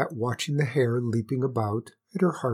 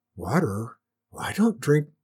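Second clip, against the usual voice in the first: feeble, faint, weak, barely-there voice. Reading a story, the narrator voices the queen answering the hare, faintly. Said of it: "began the queen faintly".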